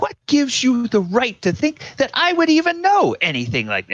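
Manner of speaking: outraged, indignant voice climbing very high. Voicing a proper lady asked about a rumor: rising indignant voice. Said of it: "her voice starts to, starts to raise".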